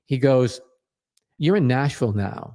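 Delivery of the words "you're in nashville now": put-on stern voice. Retelling a manager's warning to a new hire: imitating a stern voice. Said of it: "he said very sternly".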